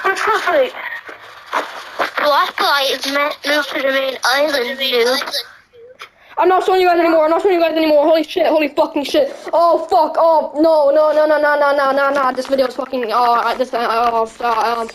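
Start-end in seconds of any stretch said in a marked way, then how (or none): 0.0-5.2 put-on voice like a baby. Showing the audience what the voice sounds like: baby-like voice. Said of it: "it kind of sounds like a baby".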